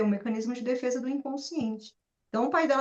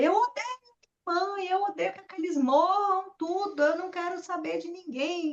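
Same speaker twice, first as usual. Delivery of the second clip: put-on desperate screaming in despair, much higher; 6 semitones higher than usual. Retelling how a woman screamed over the phone, imitating a desperate scream. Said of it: "gritando louca, desesperada".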